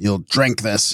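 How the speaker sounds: low, growled voice. Reading a story, the corporal speaks as he leaves; growled. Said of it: "he growled".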